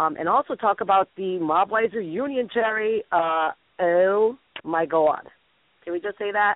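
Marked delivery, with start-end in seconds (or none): 3.1-5.2 put-on Canadian accent on oh my God. Previewing a guest's reunion talk, the speaker says it in a Canadian accent. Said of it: "I said that in Canadian".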